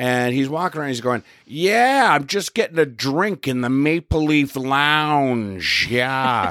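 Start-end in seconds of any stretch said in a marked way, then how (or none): 1.5-6.5 very slow, drawn-out, showy, boastful talk. Retelling a man on his cell phone in a lounge: imitating someone talking really loudly. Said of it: "he's talking really loudly".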